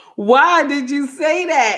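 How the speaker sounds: put-on offended, affronted child. Imitating a child who acts indignant when corrected: mock indignant tone. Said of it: "do your best impression of".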